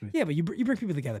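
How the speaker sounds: plain, calm, straight-to-the-point, matter-of-fact delivery. Retelling what Hirsch said at the first club event: imitating Hirsch's calm voice. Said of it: "that's how Hirsch talks".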